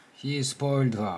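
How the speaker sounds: ordinary delivery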